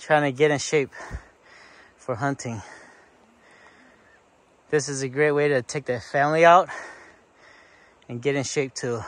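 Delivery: heavy, out-of-breath breathing. Climbing uphill on a family outing, talking with heavy breathing. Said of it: "Excuse me for the heavy breathing".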